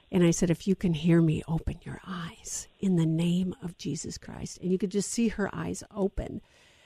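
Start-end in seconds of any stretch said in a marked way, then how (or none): 0.5-4.5 hushed, whispered voice. Retelling whispering to a woman having convulsions: retelling a whisper. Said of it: "I whispered to her".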